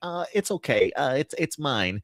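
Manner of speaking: way over-the-top nerdy voice. Imitating the trailer shot of struggling to pull the sword down: over-the-top nerdy Prince Adam voice. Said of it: "it just feels really over the top nerdy".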